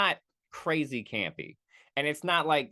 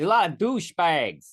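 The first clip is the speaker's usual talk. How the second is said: bad put-on Massachusetts accent, raised voice; 3 semitones higher, 6 dB louder than usual. Trying to imitate Massachusetts characters and admitting it isn't working, bad Massachusetts accent. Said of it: "trying to do that accent".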